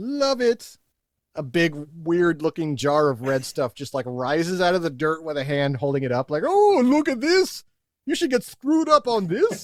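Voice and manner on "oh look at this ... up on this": corny, hammy, high-pitched vampire voice. Describing an imagined wine cooler ad, speaker voices it in a corny Dracula voice. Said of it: "like in a corny Dracula voice".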